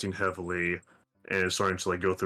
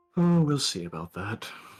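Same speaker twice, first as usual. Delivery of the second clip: chuckling lightly through the words; 4 semitones higher, 3 dB louder than usual. Voicing a character answering a friendly rival's boast: chuckling softly while speaking. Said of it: "She chuckles softly and says".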